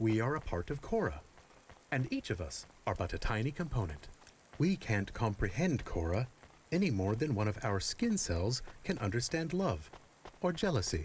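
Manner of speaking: put-on serious voice. Reading a text aloud to the others: put-on serious voice. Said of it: "I will use my serious voice".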